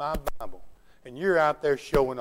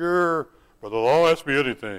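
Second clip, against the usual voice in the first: put-on deep, low voice; 3 dB louder than usual. Retelling a man's reply when the speaker asked him a question: imitating a deep voice. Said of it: "Had a deep voice".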